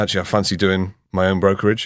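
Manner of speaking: ordinary delivery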